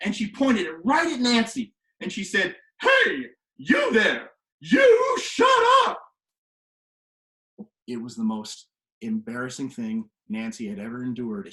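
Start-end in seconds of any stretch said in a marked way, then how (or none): 2.8-6.0 put-on teacher yell, very high and swooping. Retelling how a teacher silenced a student: imitating Battle's battle cry. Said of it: "when you hear Battle do her battle cry".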